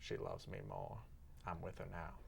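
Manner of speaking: soothing, calming voice with audible creak. Playing a feuding celebrity in a skit: Morgan Freeman impression. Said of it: "doing a Morgan Freeman impression".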